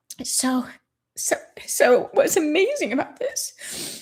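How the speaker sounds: choked up, fighting back tears, pitched high. Speaker telling a story that makes them cry every time: choked up. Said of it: "give me a minute".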